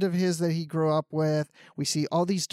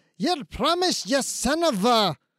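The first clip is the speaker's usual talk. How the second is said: put-on Scottish accent, upset, higher; 8 semitones higher than usual. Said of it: "with the Scottish accent".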